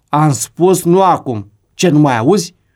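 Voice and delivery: harsh scolding. Acting out a parent snapping at a pleading child, mock raised, harsh tone. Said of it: "Îi spui pe un ton ridicat și aspru".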